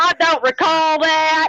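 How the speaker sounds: very slow, deliberate, drawn-out delivery. Mocking people who claim not to remember: Jeff Sessions voice. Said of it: "My best Jeff Sessions voice".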